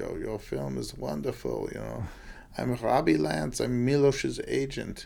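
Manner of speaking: put-on European gentleman voice with Viennese accent. Speaker recounts a man approaching in the lobby at intermission, in a Viennese accent. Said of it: "European gentleman with a Viennese accent".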